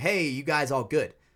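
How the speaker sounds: ordinary delivery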